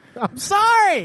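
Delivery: drawn out, booming, very high, slow delivery. After being told to talk loud on the show, speaker apologizes, slow and loud. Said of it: "that was slow and loud".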